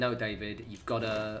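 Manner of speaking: ordinary talk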